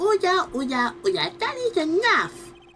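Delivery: very high, sing-song put-on baby voice. During a cross-examination, the speaker blurts out this line in a baby voice. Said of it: "What was that baby voice?".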